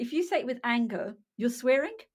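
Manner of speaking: ordinary delivery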